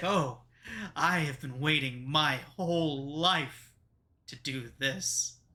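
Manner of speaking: slow delivery, smiling all the way through. Voicing a character whose smile cracks across her face: said with a smile. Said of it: "a smile begins to crack her face".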